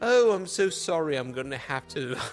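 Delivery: bad, fake, put-on British accent. Speaker retelling a scene of the evil person knocking on the door, terrible British accent. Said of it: "that was my terrible British accent".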